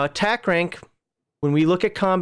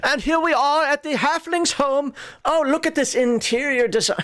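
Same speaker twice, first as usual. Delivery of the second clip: showy put-on British accent, pitched up; 9 semitones higher than usual. You can't remember the man's name, so show what you picture, imitating a man with a british accent. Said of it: "He had that British accent".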